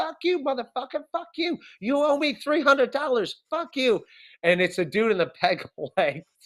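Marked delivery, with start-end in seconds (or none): 0.0-4.0 put-on woman's voice, high, shrill screaming. Retelling hearing a woman yell at a man from a car line, imitating a woman yelling. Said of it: "we just hear her yelling like".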